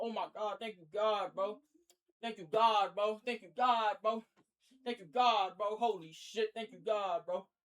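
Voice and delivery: ecstatic, overjoyed, drawn-out, repeated gratitude. Retelling jumping up and down at a negative test: imitating own ecstatic relief. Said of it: "I'm jumping up and down talking about".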